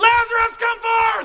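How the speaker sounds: very loud, violently loud, high-pitched calling shout. Retelling Jesus calling Lazarus by name, violently loud shout. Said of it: "The loud voice, violently loud".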